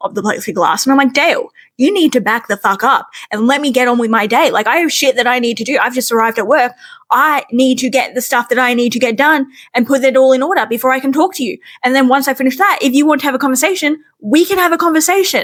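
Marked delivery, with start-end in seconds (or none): 1.1-15.4 mock, aggressive, in-your-face confrontational delivery. Speaker retells confronting dale through the plexiglass at work, retelling getting in someone's face. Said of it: "I get all back up in his face".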